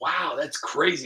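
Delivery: plain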